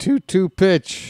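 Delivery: voice breaks mid-word and jumps high. Calling a baseball at-bat on the broadcast: voice cracking. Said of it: "Did my voice just crack?".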